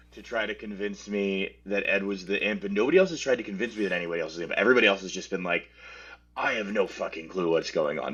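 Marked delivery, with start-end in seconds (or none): 6.4-8.2 put-on British accent. Imitating what everybody else has been saying: put-on british accent. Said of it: "but in a British accent".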